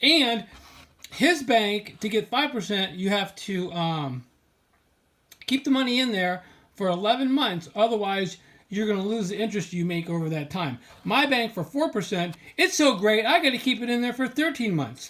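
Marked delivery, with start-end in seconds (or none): 11.0-15.1 sarcastic, falsely admiring tone meaning the opposite. Complaining about a bank's thirteen-month term for four percent: sarcastic. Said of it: "I'm being sarcastic".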